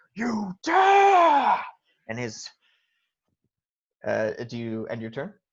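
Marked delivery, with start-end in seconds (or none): 0.2-1.6 very high booming monster roar, words stretched out. The game narrator voices a creature struck on its calf, roaring. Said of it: "as he just roars".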